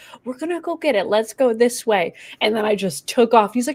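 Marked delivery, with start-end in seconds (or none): 0.2-2.1 mock extremely gentle, tender delivery. Recalling a group outing, imitating Jan thirty-two's gentle voice. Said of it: "In like the most gentle voice ever".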